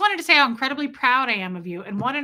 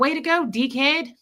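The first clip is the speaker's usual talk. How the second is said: cheeky mock Australian accent, higher and louder. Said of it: "I can't do an Australian accent except for dickhead".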